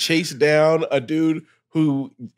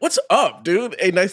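energetic put-on voice, higher; 3 semitones higher than usual. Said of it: "there was more energy".

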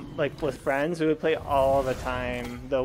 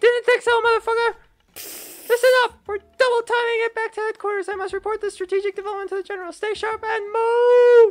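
high-pitched voice, somewhat louder; 8 dB louder than usual. Game character giving orders to the squad; high-pitched voice. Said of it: "That was a high-pitched voice".

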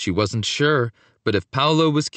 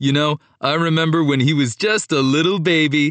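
playful, teasing, ribbing tone; 3 dB louder than usual. Antonio, greeting his cousin Paolo, teasing him. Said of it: "Antonio teased".

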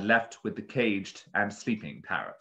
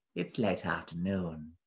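hushed, low, soft slithering creature voice; 4 semitones lower, 5 dB quieter than usual. A narrator reads a beast answering a man's greeting: soft, slithery beast voice. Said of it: "The beast's voice was soft and slithery".

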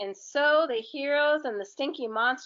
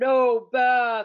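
loud, bellowing, roaring monster voice; 6 dB louder than usual. Narrator reading a monster refusing a bath, in a roaring monster voice. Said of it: "roared the monster".

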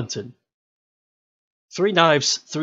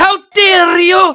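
high, loud, furious mock outrage shout. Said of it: "this guy got so fucking angry".

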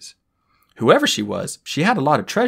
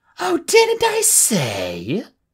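very high, swooping, drawn-out hiss; 10 semitones higher than usual. Reading the story aloud, the dragon answers a protest, hissing. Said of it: "The dragon hissed".

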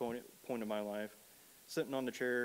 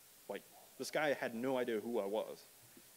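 ordinary talk

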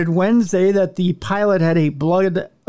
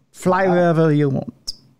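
horrible, bad French accent. Mocking French officials letting a drunk pilot board: horrible French accent. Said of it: "that's a horrible French accent".

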